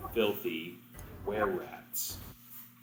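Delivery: half whisper. Voicing a commander who sits close to the party: half whisper. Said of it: "he begins to speak in a whisper, or close to a whisper, half a whisper".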